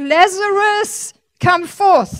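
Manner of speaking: restrained authoritative shout. Acting out a command shouted into a tomb: retelling a shout. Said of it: "He shouted that".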